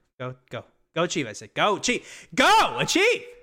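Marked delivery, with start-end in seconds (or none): 2.4-3.2 ear-splitting, very loud, shrill, high-pitched cheer. Closing the episode with the catchphrase, shouted: very loud shout. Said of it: "You just broke everybody's ears right there".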